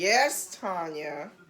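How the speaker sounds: mock, low, sassy voice full of attitude. Imitating how the other speaker just answered her: imitating Gordon with attitude. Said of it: "Sound like he said".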